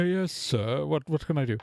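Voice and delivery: put-on old elf butler voice. An older elf butler walks out and answers; older elf butler voice. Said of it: "an older elf in a ... butler's, uh, suit, uh, walks out and goes".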